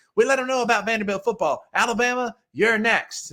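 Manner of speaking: put-on high-pitched voice. Retelling a lineman's postgame boast, imitating a high-pitched voice. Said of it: "in a very high-pitched voice for a large man".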